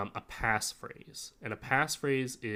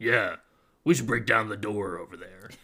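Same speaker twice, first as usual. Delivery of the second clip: loud, gruff villain voice; 7 dB louder than usual. Speaker demonstrating one of their go-to character voices, gruff bad-guy voice. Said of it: "bad guy or gruff gruff character".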